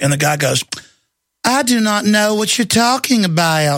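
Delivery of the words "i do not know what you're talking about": put-on Georgia accent, playing dumb. Retelling an exchange about a bill, the speaker quotes a man in a fake georgia accent. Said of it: "in his fake Georgia accent".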